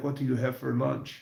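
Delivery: put-on thick Jamaican accent. Quoting a Jamaican man he used to trade lunches with: thick Jamaican accent. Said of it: "thick accent because he's Jamaican".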